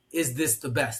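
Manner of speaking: normal talking voice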